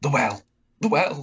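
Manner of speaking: high, squeaky, words squeaked out. Answer a warrior who has intimidated you with a sword poking into you, squeaking out the words. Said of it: "he squeaks out".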